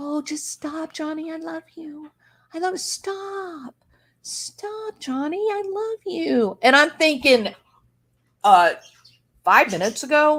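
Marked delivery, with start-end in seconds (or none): 0.0-6.6 put-on high cooing baby voice, "stop" stretched out. Retelling what a woman said in a recording: imitating someone's baby voice. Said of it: "she starts talking to him in this baby voice".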